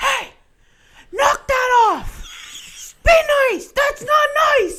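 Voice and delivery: shrill, booming, drawn-out, very high, very loud yell. Retelling how Cohen told fighting hockey players to stop: imitating Cohen yelling. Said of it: "yelling at him".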